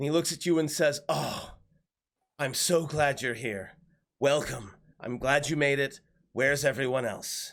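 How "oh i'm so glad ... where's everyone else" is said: warm, grateful voice melting with relief. Barnabas looks up from a map in the command tent and greets the arrivals, relieved. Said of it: "he just like melts with relief".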